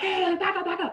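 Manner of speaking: acted, sudden screaming, pitched very high. Retelling a man with a gun yelling at the crowd: imitating someone screaming. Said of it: "he just starts screaming".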